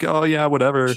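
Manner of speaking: breezy, unbothered tone. Retelling how a sick woman's friend reacted, imitating casual indifference. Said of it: "her friend's just casually like".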